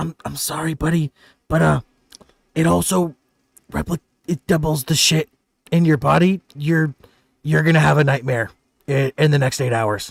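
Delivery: hushed whisper. Game master voicing a character who leans close to a player, whispering. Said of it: "he whispers in your ear".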